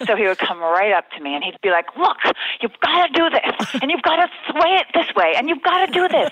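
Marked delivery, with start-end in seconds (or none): 2.0-6.3 put-on pushy voice, very high-pitched and loud. Recalling a producer who came right up to give directions; imitating a very loud producer. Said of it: "and he was very loud".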